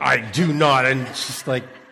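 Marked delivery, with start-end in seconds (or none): 0.0-0.9 put-on, very loud, indignant voice. Retelling how his dad denied grunting too: imitating an indignant dad. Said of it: "he gets all indignant".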